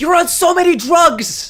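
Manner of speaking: very high, loud yelling outburst. Mid-rant, yelling before apologizing for it: yelling. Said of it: "I'm sorry, I'm yelling".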